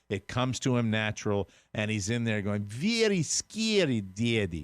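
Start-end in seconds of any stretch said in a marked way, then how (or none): 2.6-4.6 put-on homemade, amateur-sounding Russian accent. Parent repeating what the son said, imitating his Russian accent. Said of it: "did a Russian accent".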